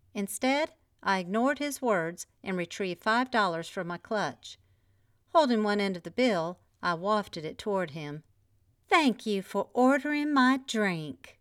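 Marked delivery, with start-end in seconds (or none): 8.9-11.1 overly sugary, syrupy, sickly-sweet saccharine voice. Wafting a five-dollar bill toward a man who ordered a drink, in a saccharine voice. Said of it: "in my most saccharine voice".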